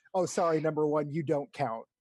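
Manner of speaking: ordinary delivery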